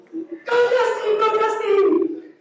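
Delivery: crazy-mom scream, very high, slow, drawn-out. Mom recalling running the sidelines at her son's game, retelling a scream. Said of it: "I'm screaming the whole time".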